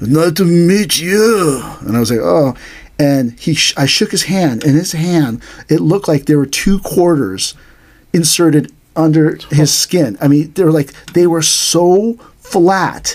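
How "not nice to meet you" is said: put-on elderly man's voice, Korean-accented English. Recounting meeting a guy's Hapkido master, imitating the old Korean man's accent. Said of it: "this old Korean guy talking like this".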